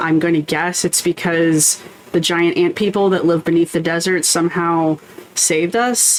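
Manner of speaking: usual speaking voice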